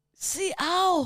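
very high, mortally wounded cry of pain, ow. Playing a role another speaker calls out: mortally wounded Spanish bullfighter. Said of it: "Spanish bullfighter who's just been mortally wounded".

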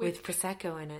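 low, leaned-in delivery. Two hosts imitating an actor's line reading: Emma D'Arcy's low delivery. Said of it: "And then just the low delivery".

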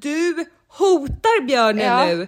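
put-on yelling, sharp and high-pitched. Speaker retells a bear encounter, quoting a woman on the phone, imitating someone yelling. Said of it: "Hon skrek i telefonen".

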